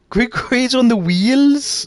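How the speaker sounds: very high, bad Welsh accent drifting into Scouse. Trying a Welsh accent again for chat: bad Welsh accent turning Scouse. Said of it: "they're turning into Scouse now".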